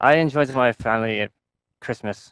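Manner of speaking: put-on fake Irish accent. Chatting with show hosts as a caller, joking: put-on Irish accent. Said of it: "I should stop talking like an Irish person now".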